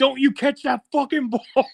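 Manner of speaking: mock very high-pitched shouting. Describing Quincy nearly catching an interception, the speaker retells yelling at the TV. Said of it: "I'm yelling at the T V".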